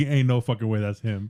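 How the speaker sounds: normal talking voice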